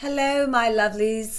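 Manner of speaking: playful put-on British accent. Channel host greeting viewers at the start of a video, British accent. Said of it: "I just want to be British every time I say hello".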